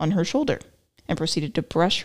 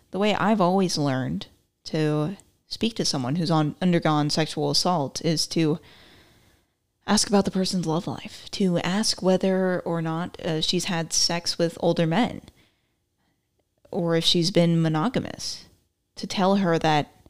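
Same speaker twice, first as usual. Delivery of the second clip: usual speaking voice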